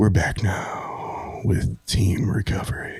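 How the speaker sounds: radio announcer, on-air host delivery. Speaking to the group, in a radio announcer voice. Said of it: "You got a great radio voice".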